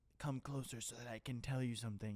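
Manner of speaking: put-on dying voice. Retelling a movie scene, quoting the zombified character: imitating dying Malgosha. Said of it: "she's, like, zombified, so she's, like, dying slowly".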